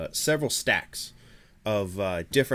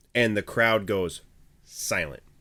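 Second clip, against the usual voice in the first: plain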